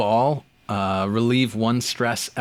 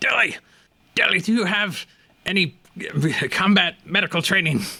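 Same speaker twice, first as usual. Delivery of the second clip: strained, high voice forced through gritted teeth; 9 semitones higher than usual. In a tabletop game, a character being dragged to safety asks a companion, through gritted teeth. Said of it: "through gritted teeth".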